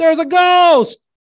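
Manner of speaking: high, loud, terrified yell of alarm. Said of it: "some guy had to yell".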